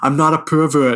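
mock small, contained scream, mild yell. Describing a funny movie scene, retelling the man screaming back at the mothers. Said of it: "he's like screaming back at them".

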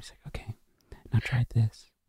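close, hushed, soft whisper in the ear. Retelling how a director coached an actor on the floor: imitating Joss whispering. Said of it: "just whisper in my ear".

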